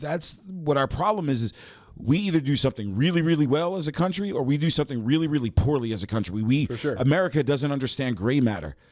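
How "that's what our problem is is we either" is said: plain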